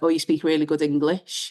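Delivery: ordinary talk, nothing marked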